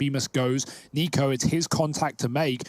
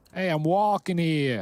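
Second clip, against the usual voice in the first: put-on Boston accent, pitched higher; 4 semitones higher than usual. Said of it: "a Bostonian thing right there".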